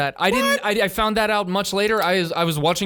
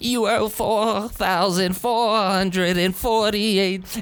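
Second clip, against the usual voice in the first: put-on grandmother voice. Acting out an auditor who agrees to speak in the man's grandma's voice. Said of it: "do it in your grandma's voice".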